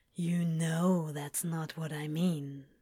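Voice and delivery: low, soft, rumbling voice. Narrator reads a man speaking close into another man's ear, voice dropped low, rumbling. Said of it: "Crowley's voice had dropped by nearly a full octave".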